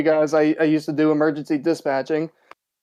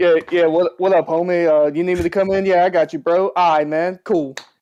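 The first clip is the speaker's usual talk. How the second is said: casual slangy put-on voice. Explaining how not to talk to a boss, speaker imitates casual slang talk. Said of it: "there and be like be".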